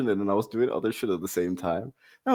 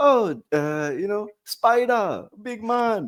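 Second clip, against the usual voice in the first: put-on drawn-out, very high, slow Jamaican accent; 11 semitones higher than usual. Imagining movie characters speaking like Jamaicans: put-on Jamaican accent. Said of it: "they spoke like Jamaicans".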